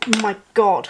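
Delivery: loud sudden gasp. While crafting mushrooms with hot glue, the speaker reacts, gasping.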